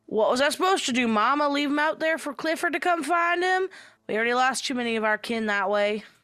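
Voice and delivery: put-on kobold creature voice. Voicing Jebediah, a kobold, answering Mama: voicing kobold Jebediah. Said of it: "And he goes".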